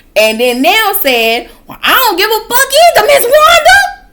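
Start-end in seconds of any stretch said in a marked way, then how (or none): 1.6-3.7 heated, very high-pitched delivery. Retelling an argument between two old ladies, quoting one's reply: mock-heated retort. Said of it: "they was getting heated".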